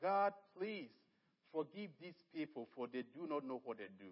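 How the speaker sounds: usual speaking voice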